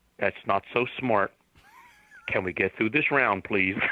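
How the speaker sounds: mock flat monotone voice. Retelling a radio call from Richard, imitating a flat monotone voice. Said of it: "That's a good Richard".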